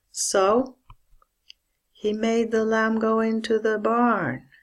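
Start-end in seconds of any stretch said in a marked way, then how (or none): 2.0-4.4 even, level pitch throughout. Pronunciation lesson, the sentence said with much flatter intonation. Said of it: "We can say the sentences with a much flatter intonation".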